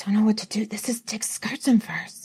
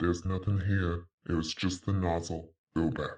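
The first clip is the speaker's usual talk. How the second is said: eerie, very low, very quiet, hushed, scary voice; 9 dB quieter than usual. Actor under a truck trailer warning someone to turn back, in a scary voice. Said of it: "and it's scary".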